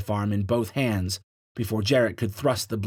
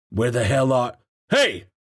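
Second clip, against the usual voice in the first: loud, strained, tense, rough, gruff voice; 3 semitones higher, 5 dB louder than usual. One of the Reds speaks on entering the brig, tense, gruff voice. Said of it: "spoke in a tense, gruff voice".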